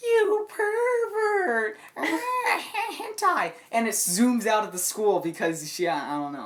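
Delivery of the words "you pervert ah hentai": put-on very high, very slow, acted tearful anime girl wail. Imitating an embarrassed girl in a high school anime: imitating a crying anime girl. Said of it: "and then she's crying".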